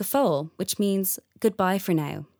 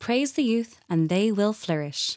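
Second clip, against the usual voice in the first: normal talking voice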